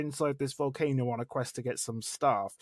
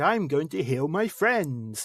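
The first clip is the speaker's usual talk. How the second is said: lisping, prophetic preacher voice, louder; 5 dB louder than usual. Imitating a game NPC who always talked this way: lisping life cleric prophecy voice. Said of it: "he always spoke with a lisp and a really sort of".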